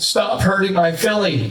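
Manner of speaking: put-on child sobbing, bawling and screaming. Retelling his kid's reaction at a wrestling match: imitating a kid crying and screaming. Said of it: "He starts bawling, crying, screaming".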